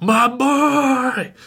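play-acted very high, feral, drawn-out cry, boy stretched. Retelling a movie scene where Hart goes feral: Hart going feral. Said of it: "goes feral and just like".

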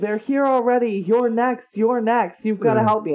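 raving, desperate, wild yelling cry. Retelling what a man on the freeway shouted at passing drivers, retelling a man's yelling. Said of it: "he's yelling".

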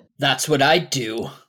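low voice of a talking wolf. Playing a wolf who can apparently speak Common, answer in a wolf voice. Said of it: "It's my wolf voice".

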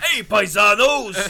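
loud wrestling-manager holler. Talking about the Mario casting, the speaker does a Captain Lou Albano impersonation. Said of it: "that was my Captain Lou Albano impersonation".

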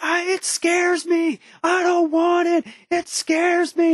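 mock, shrill, high-pitched, drawn-out scream. Retelling hitting something with a bat as a scared child, retelling a childhood scream. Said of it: "And I'm screaming".

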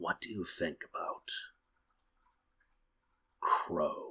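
low gravelly hush. Reading a story aloud, voicing Spider: lowered, gravelly and hushed voice. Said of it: "His voice lowered, gravelly and hushed".

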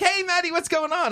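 very high, all-thrilled, excited voice. Retelling answering a sister's phone call: imitating own excited greeting. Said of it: "I'm all excited to talk to her".

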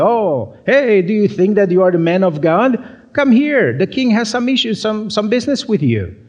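high, mocking, sarcastic taunting tone. Acting out the captains calling Elijah to the king, imitating a sarcastic tone. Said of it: "maybe they use a sarcastic tone".

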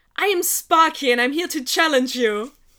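very loud, full-voiced, declaring tone. Narrating a story, voicing her challenge to him, very loud. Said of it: "she just says very loudly".

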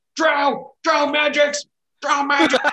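very high, very loud, barked-out yell. Narrating a game, voicing one of them who notices the magic, with a barking yell. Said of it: "one of them barks out and he yells".

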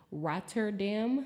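Rotterdam pronounced in an American accent. Naming the city Rotterdam, saying it in an American accent. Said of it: "I'll say it in my American accent too".

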